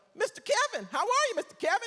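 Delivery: very high, squeaky cartoon-character voice. Retelling how the daughter's date greeted him: imitating a cartoon-character voice. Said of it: "Like a freaking cartoon character".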